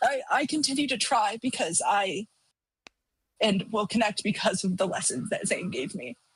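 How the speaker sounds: moved, overcome, pushing through the feeling. Speaking about lessons from a late uncle, you say this: emotional. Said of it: "sorry, emotional".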